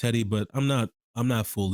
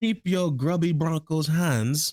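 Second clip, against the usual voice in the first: put-on English accent from England, pitched up; 6 semitones higher than usual. Discussing a draft, repeating a line in an England English accent. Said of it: "I'm talking about England English".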